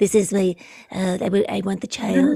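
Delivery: terrible hushed voice, just above a whisper. Showing how a character sounds in the audiobook: terrible Werner Herzog impression. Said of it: "that's a terrible impression".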